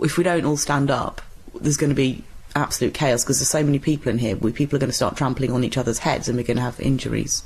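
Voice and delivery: plain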